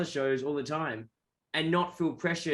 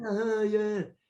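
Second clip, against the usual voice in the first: laid-back surfer-dude voice. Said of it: "I make him sound like Keanu Reeves".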